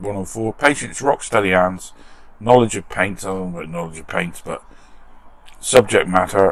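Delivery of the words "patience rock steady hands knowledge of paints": normal talking voice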